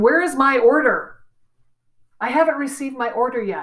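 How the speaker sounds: put-on snooty, demanding, little snotty tone. Reading out a customer's email as imagined: imitating a snotty tone. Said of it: "gives it a little snotty tone to it".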